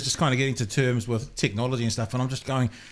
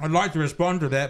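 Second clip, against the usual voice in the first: speaking with mouth full of food; 3 semitones higher than usual. Podcast host, eating a burger on air, answers a co-host: talking with mouth full. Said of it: "but my mouth's full of reburger".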